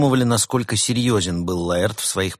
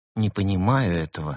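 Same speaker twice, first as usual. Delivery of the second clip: plain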